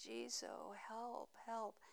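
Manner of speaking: very small, tiny, hushed pleading voice. Retelling calling on Jizo for help while half asleep, in a tiny, tiny voice. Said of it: "in this tiny, tiny voice".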